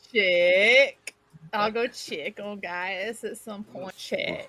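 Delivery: slow delivery with own natural accent strongly slipping through. Repeating a phrase the others misheard, own accent slipping through.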